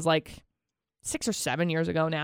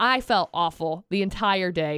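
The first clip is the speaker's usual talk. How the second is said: normal talking voice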